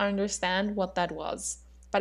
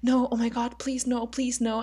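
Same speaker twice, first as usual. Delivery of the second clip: put-on hysterical crying; 3 semitones higher than usual. Acting out to a listener what they said while breaking down in tears; imitating hysterical crying. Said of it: "I started like hysterically crying".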